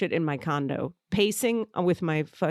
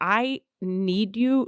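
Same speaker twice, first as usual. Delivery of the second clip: crying, tearful, pleading voice; 3 semitones higher than usual. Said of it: "from my tears".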